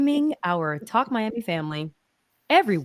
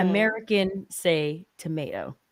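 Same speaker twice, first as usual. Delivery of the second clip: usual speaking voice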